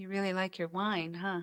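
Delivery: soft, very sweet, very gentle voice. Recalling a woman's remark after the wine spilled, imitating a sweet, gentle voice. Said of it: "in the most sweet, gentle way".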